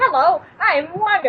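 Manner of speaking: high, bungled, failed try at cartoon voice. Doing a Disney Channel intro line, Wander voice. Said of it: "I can't do his voice".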